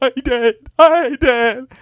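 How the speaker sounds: mock sobbing in a weirdly high, weepy voice. Retelling a pirate character's line, imitating the pirate crying. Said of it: "And he starts crying".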